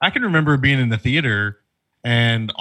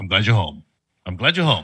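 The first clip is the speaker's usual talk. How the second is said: dry, low, matter-of-fact delivery without fuss; 4 semitones lower than usual. Describing a film scene, quoting Anthony Hopkins with a dry deadpan. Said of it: "he kind of dry deadpan says".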